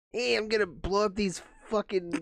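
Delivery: put-on squealing kid voice, pushed right up very high. Asked for another impression, doing Sid from Toy Story voice. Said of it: "Or Sid?".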